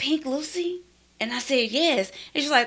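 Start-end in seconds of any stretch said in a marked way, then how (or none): 0.0-0.8 high-pitched, gasped-out, disbelieving delivery. Retelling her mother's reaction to the name Pink Lucy, imitating a gasp. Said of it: "she gasped".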